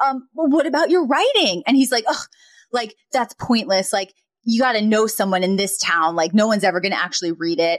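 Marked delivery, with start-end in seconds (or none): 0.0-1.6 high, anxious, desperate, pleading tone. Retelling a woman's plea to a man in a story, imitating her desperation. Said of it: "she's desperate".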